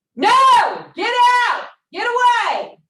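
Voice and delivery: very loud, very high, slow, booming, commanding, drawn-out yell. Speaker shows how to yell when a threat comes into your room: yelling. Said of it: "I'm going to yell here in a minute".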